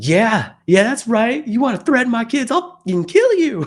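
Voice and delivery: very high, very loud, shrill, rising unhinged yell. Retelling what the mother of four behind him started shouting: imitating a woman getting nuts. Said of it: "She's, like, getting nuts".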